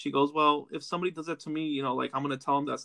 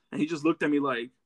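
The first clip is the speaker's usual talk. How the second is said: ordinary delivery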